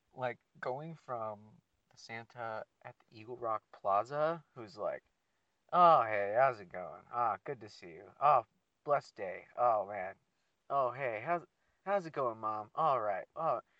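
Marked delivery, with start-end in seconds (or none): 5.8-13.6 mock laid-back chill guy voice, much louder. Describing the Santa at the Eagle Rock Plaza: imitating a chill laid-back guy. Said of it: "he's chill as fuck".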